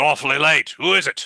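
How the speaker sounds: put-on gruff old man voice. A man answers a late knock at the door, in a gruff older man's voice. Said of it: "you hear a gruff older man's voice".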